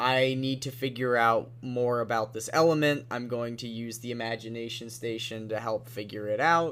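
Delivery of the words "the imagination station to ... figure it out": normal talking voice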